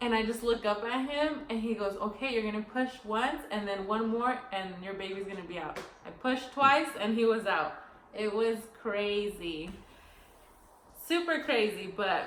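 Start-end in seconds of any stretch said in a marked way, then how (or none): none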